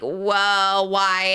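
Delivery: normal talking voice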